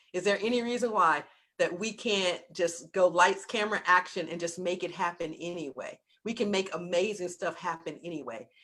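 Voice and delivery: plain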